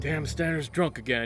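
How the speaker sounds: muttered under the breath. Playing a character in a scene, muttering under his breath. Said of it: "You hear him say under his breath".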